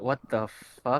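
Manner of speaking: quiet muttering under the breath. Retelling a reaction to a strange voice on the radio, murmuring. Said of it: "I just murmured".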